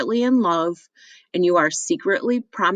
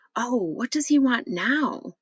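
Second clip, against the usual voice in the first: irritated, fretful half-whisper, high; 6 semitones higher, 4 dB quieter than usual. Reading a play aloud, a knock interrupts at the door: fretful half-whisper. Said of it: "In a fretful whisper".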